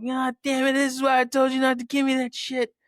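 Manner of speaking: full-on angry yelling, loud and high, cursing. Retelling how they yelled at their wife from the toilet, retelling a yell. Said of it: "I'm sitting there yelling at my wife".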